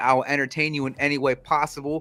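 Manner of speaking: normal talking voice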